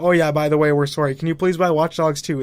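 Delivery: normal talking voice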